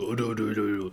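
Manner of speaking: drop into deep voice. Describing how a wrestler talks compared to his screams: Okada's deep talking voice. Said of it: "he screams super high pitch and he talks".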